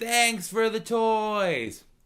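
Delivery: put-on very high, drawn-out, acted-out child's shriek. Retelling a kid leaning out a car window, imitating a kid screaming. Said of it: "And he screams".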